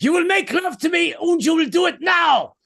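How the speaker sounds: put-on German accent, pitched very high. Speaker showing off accents they love: German accent. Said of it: "I love the German accent".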